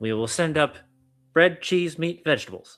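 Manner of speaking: high put-on goblin creature voice. Narrator voices the goblin confirming the player's order, in a goblin voice. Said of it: "the goblin comes up and he goes".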